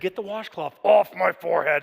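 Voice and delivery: sudden switch to rough, creaky demon voice. Retelling what Maria said during the birth: imitating Maria's demon voice. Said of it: "it switched to demon voice".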